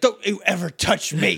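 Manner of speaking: angry, rough-edged, creaky outburst. Speaker retelling Zed's reply after being grabbed and shaken: mock-angry Vince McMahon impression. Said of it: "Zed gets counter mad and is like".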